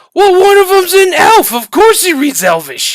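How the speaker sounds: loud, very high hollered shout. Voicing a guard who shouts back across to another guard: shouting back. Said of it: "and he shouts back".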